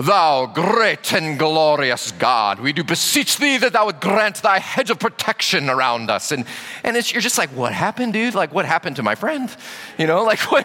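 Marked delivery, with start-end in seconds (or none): 0.0-6.3 slow, lofty, pompous, holy-sounding prayer voice. Imitating a friend who switches voices when he prays, mock holy prayer voice. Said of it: "the prayer voice".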